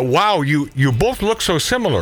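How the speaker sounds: usual speaking voice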